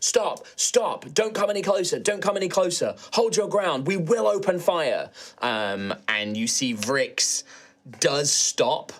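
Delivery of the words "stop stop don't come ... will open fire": high, shouted voice. Voicing guards stopping a charging creature: guards shouting. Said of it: "you can hear them shouting".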